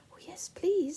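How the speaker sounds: very polite voice. Narrator reading a story voices Silky answering a witch: most polite voice. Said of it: "said Silky in her most polite voice".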